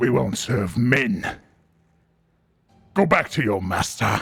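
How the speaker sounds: low-pitched, gravelly, rasping voice. A Morling creature answers a knight, speaking in a low, gravelly voice. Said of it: "speaking in this low, gravelly voice".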